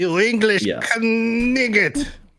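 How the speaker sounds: exaggerated, mock taunting French accent. Quoting the French taunters from Monty Python: Monty Python French taunter voice. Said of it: "that scene in Monty Python where you have the French guys".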